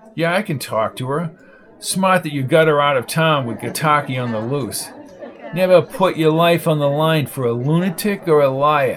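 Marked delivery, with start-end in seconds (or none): none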